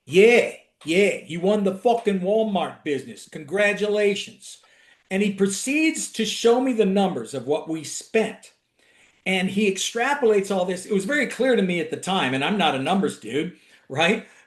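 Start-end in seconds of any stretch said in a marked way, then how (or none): 0.1-4.5 put-on Brooklyn-tinged New York accent. Retelling what a former CFO said after a big win: imitating a Brooklyn CFO. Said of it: "And he'd talk like this".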